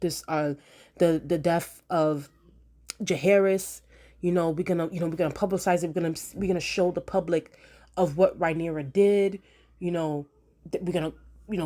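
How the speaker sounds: usual speaking voice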